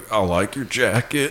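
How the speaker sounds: sinister murderer-like voice. Retelling a friend's awkward line to a girl, Buffalo Bill voice. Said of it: "again, Buffalo Bill".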